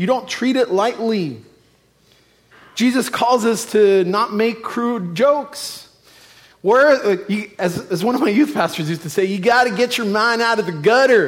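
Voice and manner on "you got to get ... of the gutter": horrible, clumsy put-on Texan accent. Quoting a former youth pastor, a Texan, in a horrible Texan impression. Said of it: "that's my horrible Texan impression".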